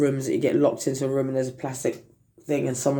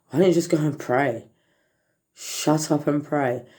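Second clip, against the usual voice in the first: plain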